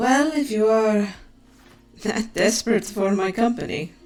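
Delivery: half-joking, half-serious teasing tone. Voicing a character answering a party member, half-joking tone. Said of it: "She half jokingly is just there like".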